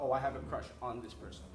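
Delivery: ordinary talk, nothing marked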